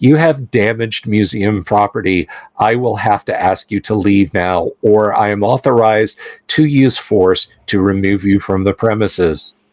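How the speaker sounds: sweet, extremely pleasant voice. Voicing a scanning device speaking to the party, in an extremely pleasant voice. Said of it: "it says in an extremely pleasant voice".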